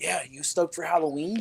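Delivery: brimming, hyped-up, excited, good-vibes delivery. Retelling the deli cashier's question: imitating a hyped-up guy. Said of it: "he was just feeling the vibes for the day".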